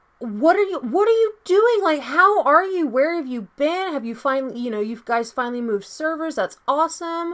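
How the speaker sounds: very high, loud, rapid excited gush. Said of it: "I was like".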